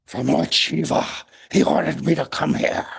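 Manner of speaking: harsh, rough, grating snake voice. Storyteller voicing the snake answering a question, in a harsh snake voice. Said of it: "The snake replies in its snake voice, harsh".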